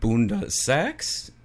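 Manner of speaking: pitch climbs at the end on bunda sex. Showing how they say bunda sex as a question, rising question intonation. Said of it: "they have to say it in a question".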